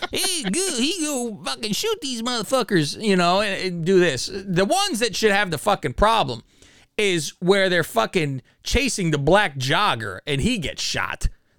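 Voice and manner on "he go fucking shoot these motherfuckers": high, put-on rural hillbilly voice. Doing how the other side talks, hillbilly voice. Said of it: "you got to have a hillbilly voice when you say it".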